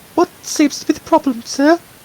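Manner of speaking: friendly voice pitched very high. Playing a nurse in a role-play, Nurse Joy voice. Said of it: "getting my Nurse Joy voice in".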